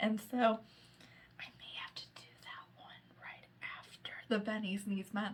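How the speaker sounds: soft, hushed, barely voiced whisper. Listing the next books for viewers, the speaker is whispering. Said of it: "I don't know why I'm whispering".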